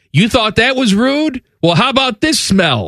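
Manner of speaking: rude, shrill shout, pitched very high. Reading a poster's story about a passenger on a plane: retelling a man's yell. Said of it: "the man reportedly yelled out".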